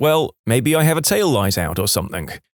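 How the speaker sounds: usual speaking voice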